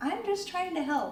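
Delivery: nurse kind of yelling.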